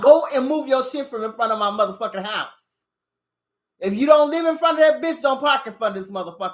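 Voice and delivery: emphatic, half-yelled, rattled-off mild yell. Telling someone to move their car from in front of his house, talking loud. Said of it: "Yeah, I'm talking loud".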